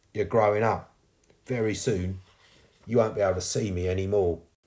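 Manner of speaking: plain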